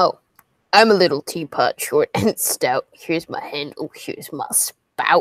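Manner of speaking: deep voice, slow reading pace. Reading a viewer's super chat aloud on request: deep voice. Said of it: "read this in that deep voice".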